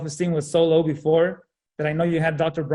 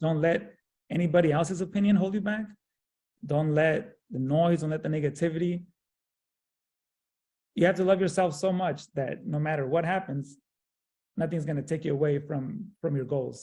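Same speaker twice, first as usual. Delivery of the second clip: moved, emotional voice; 5 dB quieter than usual. Urging a listener not to let negativity hold them back: emotional. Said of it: "Sorry, I get emotional".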